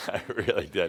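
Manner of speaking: chuckling lightly while speaking. Speaker claiming to have known Sigmund Freud, chuckling. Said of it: "(Adamus chuckles)".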